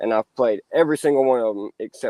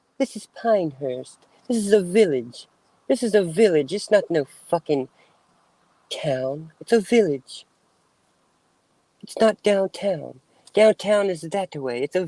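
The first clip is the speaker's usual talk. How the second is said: put-on snooty, stuck-up tone, higher pitched; 8 semitones higher than usual. Doing a bit about Pinehurst being a village, in snooty voice. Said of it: "Snooty voice".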